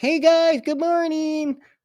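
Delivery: thin, weak, squeaky little voice, pitched way up. Imitating his weaker past self from an Instagram video, the speaker uses a squeaky voice.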